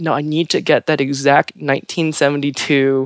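ordinary talk

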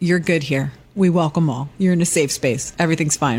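ordinary talk

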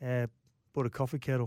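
put-on laid-back drawl. Retelling what the producer asked, imitating Daddy Vass, laid back. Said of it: "And he talks like that".

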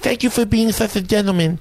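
high, warm, friendly, kindly put-on voice. Asked for their Mike Tyson one, speaker does a Mike Tyson impression. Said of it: "Your Mike Tyson one".

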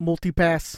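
put-on New York accent. Asked to do the Bruce Arena accent on the Fifth Element multi-pass line. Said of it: "I want you to do the Bruce Arena accent".

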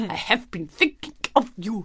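put-on heavy, thick, bear-like Russian accent, laid on thick. Describing a man she can't talk to in Russian, imitating his thick bear-like accent. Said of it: "really thick bear-like accents".

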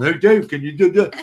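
put-on drunk voice. Retelling how drunk people keep touching and talking to him: imitating a drunk person. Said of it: "When you're drunk, you have to keep touching me, going".

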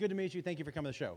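fast, plain, polite delivery. Retelling meeting a fan backstage: imitating Larry the Cable Guy's normal voice. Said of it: "In that voice".

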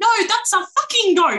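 put-on high little kid voice. Describing a video, quoting what the small child says, in a little kid voice. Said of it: "a little kid voice".

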